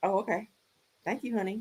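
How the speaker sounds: mock underwhelmed, soft, low-key, unexcited voice. Retelling how she reacted to getting a new car: imitating an unexcited reply. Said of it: "she didn't give none of that".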